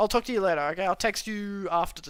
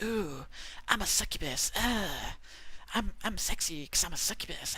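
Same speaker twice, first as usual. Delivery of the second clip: put-on husky smoker's voice, succubus voice; 3 semitones lower, 8 dB quieter than usual. Showing how a succubus character was voiced: put-on smoker's voice. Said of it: "a smoker's voice".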